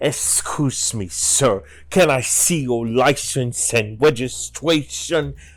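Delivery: slow hissing snake voice, drawn-out s, impeded speech. Intense highway patrolman character stopping a driver, Road Guard snake voice. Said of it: "the snake voice in top of the speech impediment".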